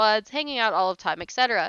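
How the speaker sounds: ordinary delivery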